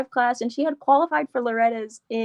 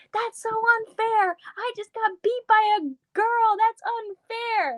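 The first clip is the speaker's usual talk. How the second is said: put-on very high, dragged-out, drawn-out child's yell; 11 semitones higher than usual. Retelling what a kid who lost a race yelled: imitating a kid yelling.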